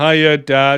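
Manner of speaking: mock wooden delivery. Imitating an actress reading her lines off her hand: mocking wooden line reading. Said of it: "reading the lines off her hand".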